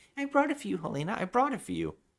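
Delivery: acted pitiful lost-puppy voice, very high, swooping. Retelling a scene where he answers a woman who is mad, imitating a lost little puppy. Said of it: "he sounds like a lost little, like, puppy".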